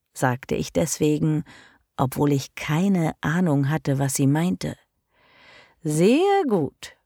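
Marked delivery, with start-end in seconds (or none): 5.8-6.8 high, sugary, sweet, fluting coo. A mistress answers her servant's obedient reply, sweet cooing. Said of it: "flötete sie".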